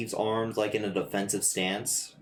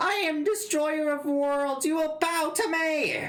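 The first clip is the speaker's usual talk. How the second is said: shrieking creature scream, pitched very high. Voicing a small creature that boasts while a Vaporeon dances around it: screaming as the creature.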